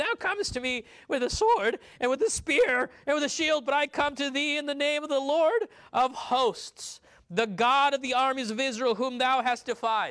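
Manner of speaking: very high, breaking voice. Retelling his words to Goliath, in a put-on cracking 13-year-old voice. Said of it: "a 13-year-old voice cracking".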